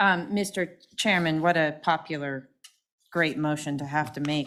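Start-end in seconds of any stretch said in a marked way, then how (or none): 1.4-4.5 heavy, dry, very sarcastic, ironic tone. Making a motion to deny funding to projects: sarcastic. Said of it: "I'm being very sarcastic again".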